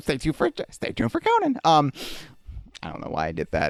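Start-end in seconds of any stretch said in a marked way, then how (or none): 0.0-1.6 very high announcer voice, swooping and sing-song. Jay Leno has just been mentioned and you feel you must do the Jay Leno voice. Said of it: "I felt like I had to do the voice".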